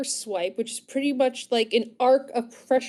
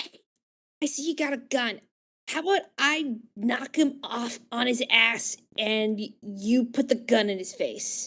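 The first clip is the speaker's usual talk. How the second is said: acted stage whisper, half-whispered; 4 dB quieter than usual. Proposing an attack plan in character to a fellow character: half-whispering in character. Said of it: "I look at Sabi and I whisper".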